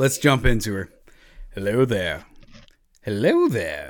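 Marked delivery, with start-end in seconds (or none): 1.5-3.9 low character voice that swoops in pitch. Attempting a movie character's greeting, admitting it isn't right: Obi-Wan Kenobi impression. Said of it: "the Obi-Wan right".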